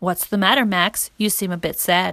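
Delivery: ordinary delivery, nothing marked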